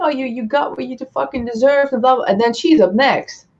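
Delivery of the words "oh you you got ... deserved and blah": put-on raging, spat-out angry yelling. Retelling a scene where a character yells at another: imitating someone yelling. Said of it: "she starts yelling at him while his body".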